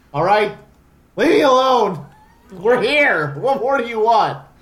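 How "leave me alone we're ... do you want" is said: full-on, loud, raised yelling. Opening a Let's Play episode, the host talks back to someone: yelling. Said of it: "Stop yelling at me".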